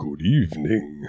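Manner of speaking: big, deep-voiced, booming delivery. Podcast co-host answers the host's request for a greeting, big Vincent Price style. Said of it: "big Vincent Price style good evening".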